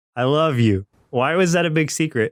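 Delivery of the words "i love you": imitated very dry, deadpan delivery. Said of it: "she's delivering it very dry".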